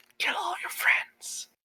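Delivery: hushed, secretive whisper. Game master voicing a figure who whispers to Shisana's character, whispering. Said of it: "he whispers into your ear".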